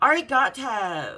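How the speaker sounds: loud put-on California Valley girl accent. Retelling what another girl said handing over her passport: imitating a valley girl voice. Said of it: "'Cause that's how she would speak".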